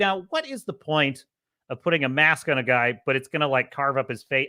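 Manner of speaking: ordinary talk, nothing marked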